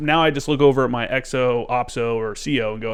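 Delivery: ordinary delivery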